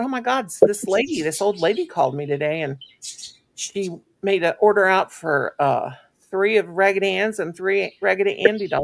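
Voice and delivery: plain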